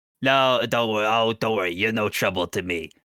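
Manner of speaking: croaky toad creature voice. Voicing a toad-like man holding hands up defensively: voicing a toad-like smoke creature. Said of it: "you see this man kinda, like, looks at you".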